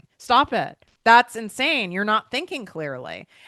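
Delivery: loud yelling. Speaker scolds the listener as if scolding their old self, yelling. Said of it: "I'm like yelling at you".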